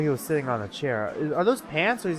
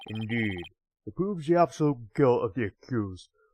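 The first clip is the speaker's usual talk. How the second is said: put-on deep voice, much lower; 5 semitones lower than usual. Speaker reading a character's lines aloud, in a put-on deep voice. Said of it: "doing the deep voice".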